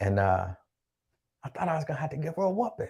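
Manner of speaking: soft, hushed half-whisper under the breath. Telling someone about a little baby who came over this morning, half-whispering. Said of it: "I don't know why I'm whispering".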